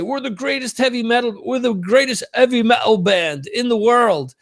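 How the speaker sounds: weak put-on British accent. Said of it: "that's my lame British accent".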